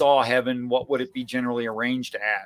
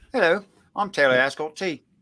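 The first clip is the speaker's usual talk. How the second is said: put-on British accent; 4 semitones higher than usual. Saying hello and a name again, now in a put-on British accent. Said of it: "I just wanna say that with a British accent".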